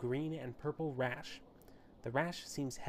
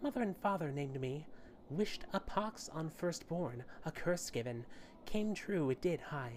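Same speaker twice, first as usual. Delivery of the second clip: put-on little-girl voice, higher; 3 semitones higher than usual. A character named Pox introduces himself and explains his name: high little-girl voice. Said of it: "high-pitched voice that sounds more suited to a girl of ten years".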